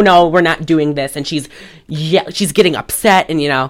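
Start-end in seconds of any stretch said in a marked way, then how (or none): none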